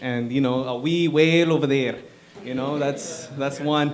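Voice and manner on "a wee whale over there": put-on, attempted Scottish accent. Practicing impressions, trying out a Scottish accent. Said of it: "I'm trying Scottish".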